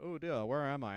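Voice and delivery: put-on plummy, genteel, well-to-do posh accent. Imagining a wrestler waking up somewhere strange: posh William Regal accent. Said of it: "a posh accent".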